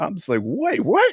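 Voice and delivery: ordinary talk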